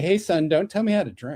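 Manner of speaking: put-on Texan accent. Retelling what drinkers in texas told the speaker; imitating a texan. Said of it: "that's very Texas".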